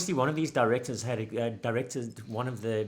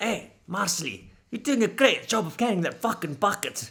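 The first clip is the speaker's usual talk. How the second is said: put-on heavy broad Scottish accent, pitched up; 8 semitones higher than usual. Retelling a man's ad-lib to a woman during filming; thick Scottish accent. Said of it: "in that like thick Scottish accent".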